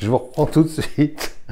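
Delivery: laughing while talking. Presenter demonstrating a lamp to viewers, caught in a fit of giggles, laughing while talking. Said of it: "j'ai un fou rire".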